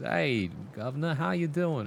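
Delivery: put-on full-on Australian accent, borrowed. Retelling how a man volunteering at the library greeted you, in an Australian accent. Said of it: "in a completely Australian accent".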